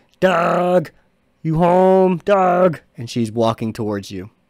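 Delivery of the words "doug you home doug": high, loud, creepy, eerie calling voice. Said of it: "misshapen face with a really too wide smile".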